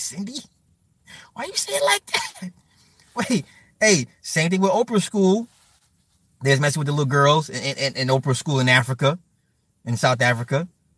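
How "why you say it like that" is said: high, squeaky, mocking voice.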